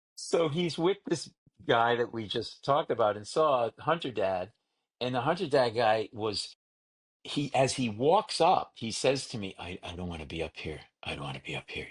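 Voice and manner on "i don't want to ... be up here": hurried, fast, very low half-whisper. Retelling what Hunter Dad said as he walked up: retelling a half-whisper. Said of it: "He whispers".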